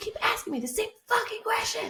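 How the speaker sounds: put-on furious shriek, very high-pitched. Retelling how a woman screamed at a man asking questions: imitating someone screaming. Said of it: "and screaming at him".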